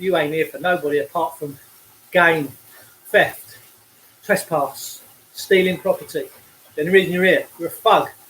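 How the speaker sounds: ordinary delivery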